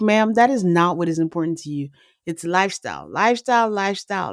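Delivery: ordinary delivery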